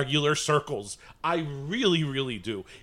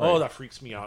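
muttering under breath, lower pitch; 3 semitones lower than usual. Retelling own reaction at the store: imitating muttering under breath. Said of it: "I said it under my breath".

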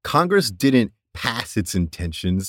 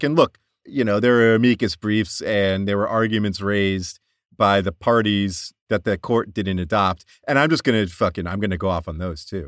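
ordinary talk, nothing marked

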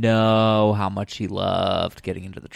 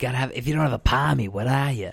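terrible, clumsy put-on Australian accent; 3 semitones higher than usual. Imitating Australians in a story, terrible Australian accent. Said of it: "Sorry for that terrible Australian accent".

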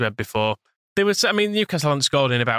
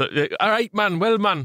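put-on, mock Geordie accent; 8 semitones higher than usual. A speaker riffing on how often Geordies say man: put-on Geordie accent. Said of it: "a bit of a Geordie trope".

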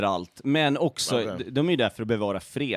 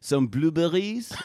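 polite put-on French accent, pitched up; 6 semitones higher than usual. Ordering at a restaurant in a made-up scene: French accent. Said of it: "I better say this in French tone".

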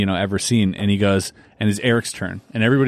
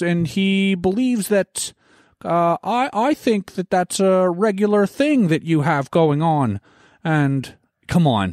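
put-on Canadian commentator voice, higher pitched; 10 semitones higher than usual. Imitating how a Canadian commentator speaks: Jordan Peterson impression. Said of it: "the Canadian guy that always speaks like this".

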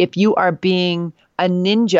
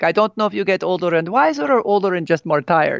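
put-on heavy Italian accent, laid on thick. Quoting an italian father on getting older: thick italian accent. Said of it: "he has a really thick accent".

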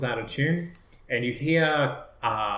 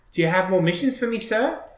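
put-on high-pitched little street urchin boy voice; 8 semitones higher, 4 dB louder than usual. Voicing the hired urchin boy calling out to a player: urchin boy voice. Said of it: "He comes running out saying".

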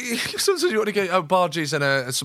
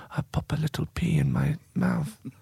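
soft, hushed, ASMR-style talking; 3 dB quieter than usual. Explaining ASMR, showing how people talk in it: ASMR-style talking. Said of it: "If you just talk like this".

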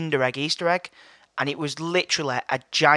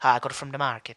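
bad put-on Irish accent drifting into Jamaican. Imitating a granddad answering where he got something: bad Irish accent impression.

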